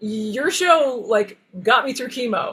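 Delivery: put-on cheery child voice. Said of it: "He was so chipper".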